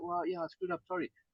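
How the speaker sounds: soft, gentle, genuinely sincere tone. Showing how you'd own a mistake to the people at the counter, a sincere apology. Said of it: "when you genuinely say".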